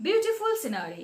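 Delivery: plain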